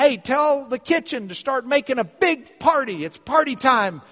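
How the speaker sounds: high, loud yelling. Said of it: "yelling to his workers".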